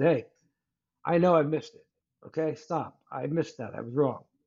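normal talking voice

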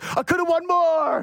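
very high, dragged-out, drawn-out screaming. Retelling a Sopranos scene where Tony shouts at Carm: imitating Tony Soprano screaming. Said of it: "And he's screaming at her".

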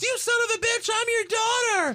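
mock, very high, shrill yelled outburst. Retelling a wrestling promo where the daughter slaps her dad: imitating someone yelling. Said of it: "And then she yells".

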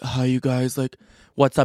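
mock drunk speech, like a drunk guy. Retelling how a very drunk partygoer greeted them: imitating a drunk guy. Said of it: "And he's so drunk".

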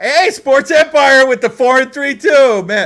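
excited, high, loud hype shout.

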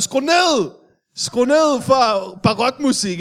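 acted-out shout, high-pitched and drawn out. Speaker retells shouting up his drainpipe at the neighbours: retold shout into drainpipe. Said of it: "så råber jeg ind i min faldstamme".

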